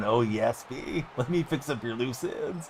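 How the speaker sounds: slow, drawn-out, creepy voice. Imagining a character speaking during a game: Floyd's creepy voice.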